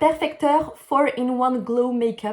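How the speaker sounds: slow, over-the-top, exaggerated put-on English accent. Makeup reviewer naming a recommended product, with an english accent on the product name. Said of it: "mon superbe accent anglais".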